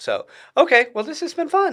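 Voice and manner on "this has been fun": voice shooting up, very high and loud. Wrapping up the interview, voice going high. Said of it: "Why did your voice go so high".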